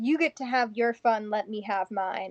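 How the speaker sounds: slow, gruff, grunting voice. Voicing a character answering a mind intrusion, grunting. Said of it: "Faith's just gonna kinda grunt".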